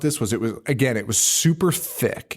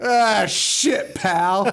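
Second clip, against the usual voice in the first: unhinged, crazy street-guy voice; 7 semitones higher than usual. Retelling a movie scene, imitating a crazy homeless person. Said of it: "like a crazy homeless person".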